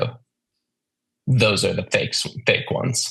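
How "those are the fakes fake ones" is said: put-on deadpan, flat and expressionless. Mimicking how they talk to clients about Braxton Hicks, imitating deadpan delivery. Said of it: "Pretty, pretty deadpan".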